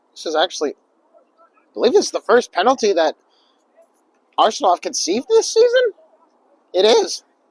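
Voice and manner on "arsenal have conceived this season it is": shocked disbelief, voice breaking. Match commentator reacting to a penalty being given, voice cracking. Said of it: "My voice cracked for that".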